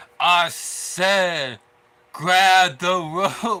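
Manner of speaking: forced deep voice, loud and very slow. Retelling a match moment: Chad Gable putting bass in his voice. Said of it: "try to put some bass into his voice".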